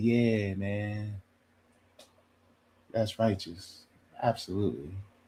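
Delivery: mellow, easygoing, soft, slow, laid-back voice. Imitating a real chill man who never raises his voice: imitating a quiet, chill man. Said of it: "They don't talk very loud".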